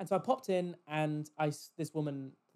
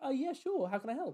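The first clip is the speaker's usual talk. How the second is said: put-on, high, startled, caught-off-guard, taken-aback politeness; 9 semitones higher than usual. Retelling answering a rude daughter who demanded help, acting out being taken aback. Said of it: "I'm taken aback".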